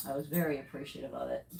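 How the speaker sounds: thick, absolute, mock-grateful sarcasm. Complaining that people who surrendered a kitten brought in parasites: sarcastic. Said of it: "I say in absolute sarcasm".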